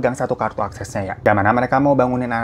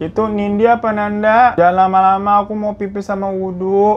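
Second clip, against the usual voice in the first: raspy, hoarse half-awake croak, slow and high; 8 semitones higher, 4 dB louder than usual. Retelling what Della said right after waking up: imitating Della's hoarse voice. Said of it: "Suara juga masih serak-serak gitu".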